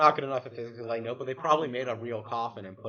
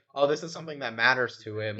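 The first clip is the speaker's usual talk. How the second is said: plain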